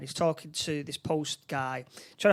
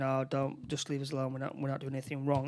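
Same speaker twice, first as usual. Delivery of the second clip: suspicious, shifty, evasive, dodgy protesting tone; 2 semitones lower, 4 dB quieter than usual. Retelling what the post guy said while acting dodgy: imitating a dodgy-acting post guy. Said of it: "he's acting all dodgy".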